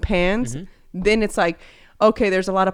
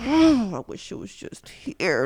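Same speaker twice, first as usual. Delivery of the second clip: put-on mumbling, muttered under the breath; 2 semitones higher than usual. Retelling what gets said when Luisa is away: imitating own mumbling under breath. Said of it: "I just be mumbling under my breath".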